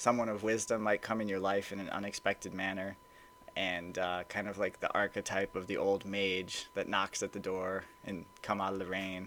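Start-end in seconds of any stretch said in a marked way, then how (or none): none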